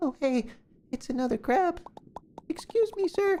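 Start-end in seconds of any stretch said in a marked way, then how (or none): 2.5-3.4 unsteady, wandering, wobbly high character voice. Voicing a character addressing a crab, unsteady high-voiced character. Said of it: "This voice is going all over the place".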